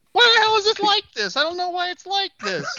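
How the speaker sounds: griping, pitched way up very high. Imitating a friend who complains a lot: imitating Nick. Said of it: "That was such a great Nick impersonation".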